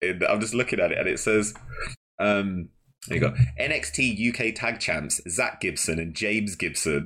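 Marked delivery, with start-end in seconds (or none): none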